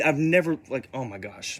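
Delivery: ordinary delivery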